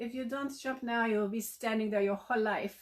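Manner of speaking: put-on Italian accent, sweet. Retelling what a woman sunbathing nearby said, in her sweet italian accent. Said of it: "her little sweet Italian accent is like".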